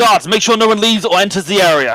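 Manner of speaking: loud booming delivery. Game master voicing the Justice ordering the guards: booming voice. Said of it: "you just hear their voice booming".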